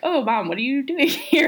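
high-pitched, mildly put-off, thrown exclamation. Retelling an episode, quoting Buffy to her mom: imitating put-off Buffy. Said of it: "not maybe annoyed, but, like, put off".

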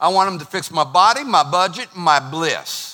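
American Southern US accent. A Bostonian talking about praying, slipping into a Southern accent. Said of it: "doing that accent on purpose or am I Southern".

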